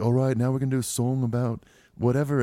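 put-on Liverpool accent. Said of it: "fake like a [name] accent".

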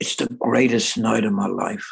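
whispering. Telling a story, lowering it so the speaker's wife won't hear: whisper. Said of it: "I have to whisper this in".

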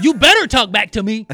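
nasty, harsh, very loud, mean voice. Imagining saying it to your kids a certain way, in a mean tone. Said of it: "if I said it that way, like a mean".

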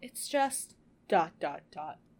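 dramatic, slow, drawn-out trailing-off with pauses.

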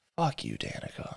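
faint, very soft whisper. Voicing a falling character's last words to a rival: whispering. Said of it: "he just whispers".

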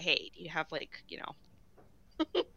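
slow, hushed, secretive stage whisper. Imagining him pulling the guy aside to ask, imitating a whisper. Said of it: "He'd be like whispering".

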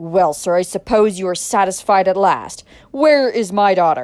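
very loud, angry, demanding voice. Adam, the visitor, demands of Dick where his daughter is, in an angry voice. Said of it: "startled by the angry voice of his visitor".

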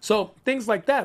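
ordinary talk

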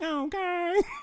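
odd, squeaky, very high, weird voice. Imitating a Panda Express worker thanking for an order: imitating Jordan's weird voice. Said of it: "She got that weird voice".

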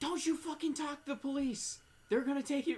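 play-acted, shrill, very high drunken screaming. Retelling how a drunk sister came out: imitating someone yelling. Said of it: "started yelling".

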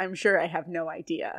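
put-on flat, deadpan tone. Retelling how one friend answered another, imitating a deadpan reply. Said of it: "Corey deadpans".

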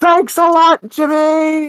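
acted pure rage, very high pitch, slow. Retelling a scene where a mother yells at jimmy: imitating a furious woman. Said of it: "this woman with pure rage in her voice".

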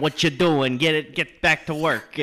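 put-on Italian mobster voice. Imitating a bossy head elf from christmas cartoons: italian mob boss voice. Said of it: "some Italian mob boss".

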